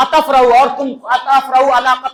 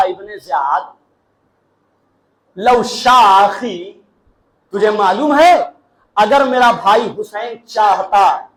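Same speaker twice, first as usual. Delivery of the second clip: shift to a low, stern, rebuking tone; 4 semitones lower than usual. Retelling a woman addressing the man behind her brother's killing: retelling with a changed tone. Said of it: "जनाबे ज़ैनब ने लहजा बदल के कहा".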